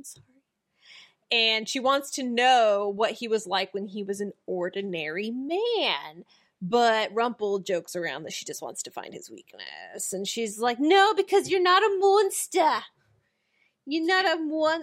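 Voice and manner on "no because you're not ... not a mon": put-on New Jersey accent, pitched up. Retelling a character's reply while recapping a scene: imitating in a Jersey accent. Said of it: "doing it more like a Jersey thing".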